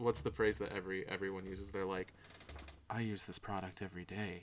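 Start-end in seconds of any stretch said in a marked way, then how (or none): 2.9-4.4 sultry sponsor ad-read delivery. Speaker demonstrating the tone people adopt when plugging products: sultry product-plug voice. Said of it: "I just like that you got sultry".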